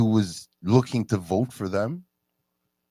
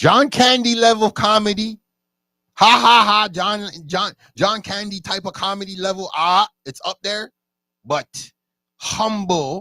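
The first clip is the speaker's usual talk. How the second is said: high, loud, excited gushing. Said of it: "I was like".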